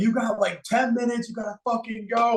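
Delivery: high, mock urgent, pump-up hype yelling. Recalling being hyped up mid-run by Zach, retelling Zach yelling. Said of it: "Like yelling".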